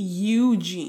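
eugene with stress on the first syllable. Showing how a name is said oddly in a movie: stress on the u of eugene. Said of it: "an emphasis on the U as opposed to the een".

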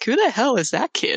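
muttered under the breath. Narrating a video, quoting the girl filming as she reacts, muttering under her breath. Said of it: "She's just under her breath".

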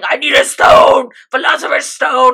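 very loud, frantic, out-of-control yelling. Retelling a story, the speaker acts out Father's outburst: retelling Father's frantic yell. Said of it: "Father starts yelling".

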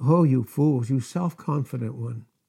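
most tender, gentle, loving reproachful tone. Quoting what Christ said to those seeking a dead Christ, acting out most tender tones. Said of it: "he said it in the most tender, tender tones".

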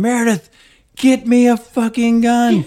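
acted, very high, shrill, loud yelling. Retelling confronting a stranger in his house, re-enacting a yell to someone else there. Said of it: "I'm yelling at the same time".

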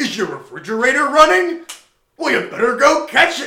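shrill, very high, very loud all-out scream. Retelling a scene: Pennywise on a library balcony yelling at a man, Pennywise screaming jokes. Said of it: "just screaming".

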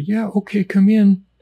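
small, high-pitched, put-on disguised voice. Retelling how a member of your own unit answered the police: little disguised voice. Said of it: "would yell in a little voice, you know, a little disguised voice".

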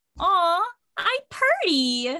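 squeaky, high, sing-song little put-on voice. Retelling how he answered when you told him he was pretty, imitating a high-pitched squeaky voice. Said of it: "all like high pitched and squeaky".

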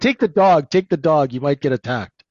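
mock thick New York accent. Retelling a line from an uncle's motorcycle story, thick New York accent. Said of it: "in the thick New York accent".

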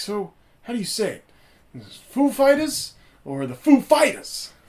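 very high-pitched, loud, wildly swinging pitch. Retelling an anecdote about a TV host: Christopher Walken impression. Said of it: "Christopher Walken's like".

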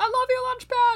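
very high, loud, shrieking yell. Recounting calling out to Launchpad as the flotilla came around, retelling a yell. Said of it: "I was yelling".

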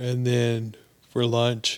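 loud words spoken through a yawn. Telling about an office visit, then apologizing; yawning while speaking. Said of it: "sorry, I'm yawning".

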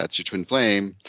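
ordinary delivery

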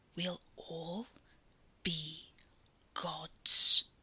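tense, charged, tight, intense delivery. The narrator reads Jem's line: tight, quiet voice. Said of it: "Jem's voice was tight and quiet".

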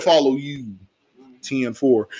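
usual speaking voice

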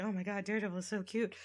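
put-on giggly voice, giggling through words. Retelling a comic scene where a character gushes: imitating a giggly character. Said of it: "giggly and like".

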